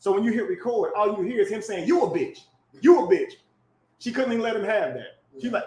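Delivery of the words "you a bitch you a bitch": acted-out blunt cussing-out. Retelling a recording of a man cussing a woman back, imitating him cussing. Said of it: "he cussing her back out".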